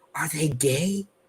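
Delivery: put-on whisper. Retelling how someone leaned in and whispered a question: imitating a whisper. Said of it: "leans in and whispers to me".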